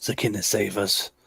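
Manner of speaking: whispered under breath. Player character, a decent bit away from the king, whispers under breath. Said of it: "I just whisper under my breath".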